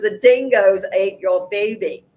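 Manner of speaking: hammy, badly done put-on Australian accent. Quoting a line while ranting about eggs: bad australian accent. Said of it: "Bad Australian accent".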